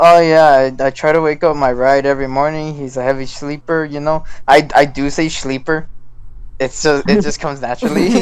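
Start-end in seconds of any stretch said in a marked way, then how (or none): none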